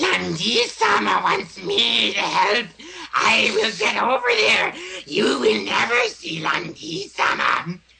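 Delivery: hissing put-on creature voice. Showing how a character who acts like Gollum talks: Gollum-like hissing voice. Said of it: "That's seriously how he talks".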